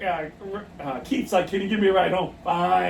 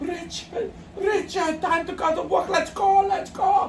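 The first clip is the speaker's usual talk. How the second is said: put-on very high-pitched, strong, heavy German accent; 12 semitones higher than usual. Retelling someone waking Richard very early for work, in a strong German accent. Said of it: "very very strong German accent".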